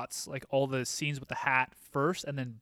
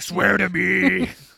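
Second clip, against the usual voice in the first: very loud, rough, gritty growling rasp; 5 semitones higher, 12 dB louder than usual.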